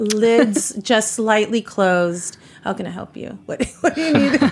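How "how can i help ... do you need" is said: acted, silky, smooth, helpful, pitched-up tone. Acting out someone doing an upward head nod, lids slightly closed: imitating a smooth voice. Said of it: "he's very smooth".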